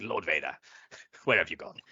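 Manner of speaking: terrible, shoddy put-on pirate accent. Imagining one of them lost in the woods, calling out as shitty pirate-accent Palpatine. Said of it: "doing a shitty pirate accent pretending like we're Palpatine".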